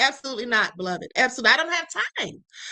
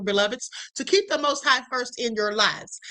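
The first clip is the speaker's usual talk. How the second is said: normal talking voice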